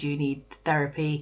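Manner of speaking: ordinary delivery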